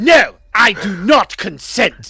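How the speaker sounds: loud yelling. Playing a character who yells after the others leave: yelling. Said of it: "he just yells".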